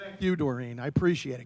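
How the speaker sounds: dry, sarcastic, insincere tone. Replying at a commission meeting to a thanks for the lecture: sarcastic. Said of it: "And the sarcasm as well".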